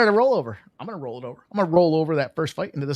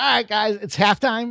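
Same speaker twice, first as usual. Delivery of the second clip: higher, put-on excited voice; 5 semitones higher than usual. Retelling a commercial's halftime party scene: imitating an excited Peyton Manning. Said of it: "He's all excited".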